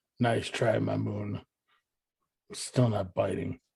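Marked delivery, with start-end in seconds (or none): 0.2-1.4 quiet mutter under breath. Speaking as a character to the moon: muttering under breath. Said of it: "under my breath".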